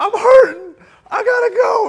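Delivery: desperate urgent cry.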